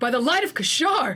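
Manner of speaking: high, loud, freaked-out cry of fear. Describing to the group how Keth reacts, imitating Keth's scared exclamation. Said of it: "like this is like really scared".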